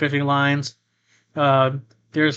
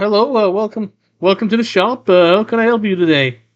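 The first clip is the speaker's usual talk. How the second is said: high, loud sea lion shopkeeper voice; 6 semitones higher, 5 dB louder than usual. Voicing the shop's sea lion merfolk shopkeeper greeting a customer: voicing a sea lion merfolk shopkeeper. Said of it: "he's like".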